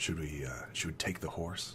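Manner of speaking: very quiet, hushed, halting whisper. Voicing scouts sneaking up on a house, whispering back and forth. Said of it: "whispering back and forth".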